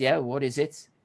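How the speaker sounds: ordinary talk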